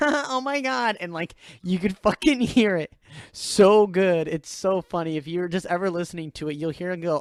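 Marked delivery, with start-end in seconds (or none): 0.0-1.0 put-on very high-pitched girlish voice. Describing a part of a recording, imitating Jordan's girl voice. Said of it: "he did this like high pitched girl voice".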